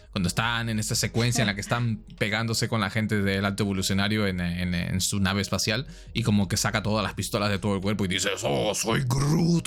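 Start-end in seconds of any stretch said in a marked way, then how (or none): 8.4-9.6 guttural, violent growl from the gut. Describing a movie battle scene, the speaker quotes the character in a guttural, violent Groot voice. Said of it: "Con una voz bien gutural y bien violenta".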